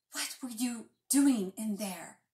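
hissing. Petra confronts Calder after a guard grabbed him: hissed. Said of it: "Petra hissed".

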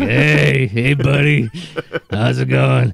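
very slow, creaky, rough, easygoing drawn-out delivery. Imitating Thundercracker, said to sound like Burger King coworkers: Thundercracker voice. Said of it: "he so sounds like, like, guys that I worked at Burger King with".

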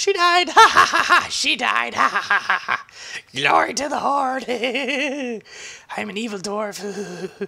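very high, loud gleeful gloating cackle, one word stretched. Retelling a dungeon run, enraged at the other players: mock gloating glee. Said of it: "that was my attitude about this point".

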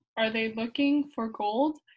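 plain

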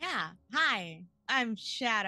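loud, very slow drawn-out voice. Introducing themselves at the start of a game session: Clarence's voice. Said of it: "I'm already doing Clarence's voice".

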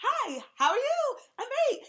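very high, loud, youthful speaking voice. Describing Mercury energy, demonstrating a youthful speaking voice. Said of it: "a youthful kind of speaking voice".

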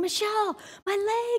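mock very high, frantic, panicked scream. Retelling the moment her leg went numb, calling out to someone, retelling a panicked scream. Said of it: "And I start screaming".

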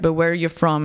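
ordinary talk, nothing marked

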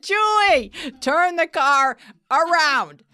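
very high, stretched-out scream. Retelling own reaction to a cousin's choices: imitating own screaming. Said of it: "I'm screaming".

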